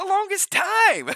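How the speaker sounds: very high, squeaky, excited squeal with voice crack. Repeating own words from a moment ago, imitating own squeaky Urkel-like voice. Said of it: "really squeaky, like Urkel".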